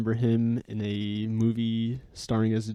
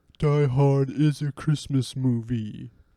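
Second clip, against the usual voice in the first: slow, drawn-out, deliberate delivery; 3 semitones higher, 3 dB louder than usual. After a question about Bruce Willis movies, the speaker imitates people who bring up Die Hard. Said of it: "That's my uh, impersonation of those who like to bring up Die Hard".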